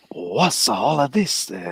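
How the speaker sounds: put-on accent drifting slightly Italian. Taking a turn at the accent line, slightly Italian-sounding accent. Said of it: "it's a little bit Italiano there".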